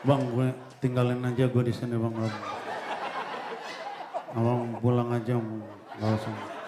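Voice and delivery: low, faint, weak, dying-sounding voice.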